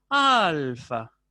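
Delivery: weight and falling pitch on al in alfa. Teaching descent and intensity on the stressed syllable: falling pitch, stressed al in alfa. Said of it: "tienen que pronunciarse con descenso tonal e intensidad en la sílaba tónica".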